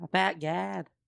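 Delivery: Chicago-style pronunciation. Drinking port with friends, the speaker repeats a phrase in a Chicago accent. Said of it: "I almost went Chicago there".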